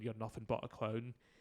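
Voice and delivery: ordinary talk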